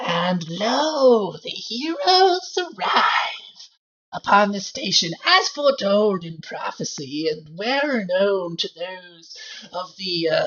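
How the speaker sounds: hoarse, raspy voice, drawn-out "lo". Game master voices a figure speaking to the heroes from a vent; raspy voice from a vent. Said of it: "a raspy voice coming from one of the vents".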